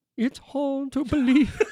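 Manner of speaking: put-on comic vampire voice. Answering a request for an impression: Jason Segel's Dracula impression. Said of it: "impression of Jason Segel's Dracula".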